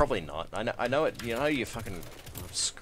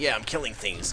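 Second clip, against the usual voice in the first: usual speaking voice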